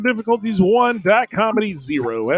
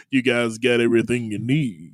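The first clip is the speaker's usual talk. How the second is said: mock unusually deep voice, much lower pitch; 9 semitones lower, 5 dB quieter than usual. Retelling what a man wiping down their table kept saying, imitating an unusually deep voice. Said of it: "unusually deep voice".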